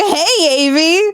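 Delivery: put-on, high-pitched dad-style voice. Quoting the listener's earlier attempt at a greeting, high-pitched dad voice. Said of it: "like high pitched dad voice".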